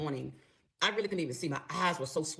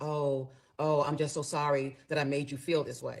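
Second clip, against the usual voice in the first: put-on hollow, uncaring, slow and insincere. Retelling how he apologised while trying to touch her: imitating an apology without compassion. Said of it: "didn't really have any compassion in his voice".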